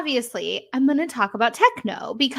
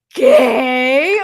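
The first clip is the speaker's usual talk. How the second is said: big, loud, drawn-out theatrical single word; 6 dB louder than usual. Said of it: "a dramatic pause and he's like".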